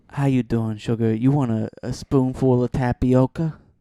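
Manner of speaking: put-on sexy voice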